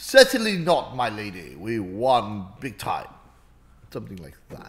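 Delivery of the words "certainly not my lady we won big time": low, stagey, played-up put-on English accent. Practising an English accent at another player's urging, English accent. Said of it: "practice your English accent".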